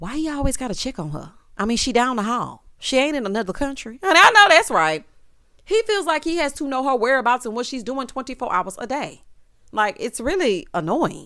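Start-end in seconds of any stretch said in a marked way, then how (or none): 0.0-4.0 whispering in a higher pitch. Retelling what one person whispered to another: imitating a whisper. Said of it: "he whispers".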